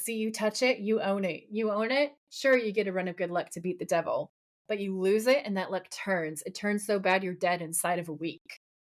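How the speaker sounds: ordinary delivery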